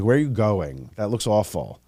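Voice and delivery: ordinary talk, nothing marked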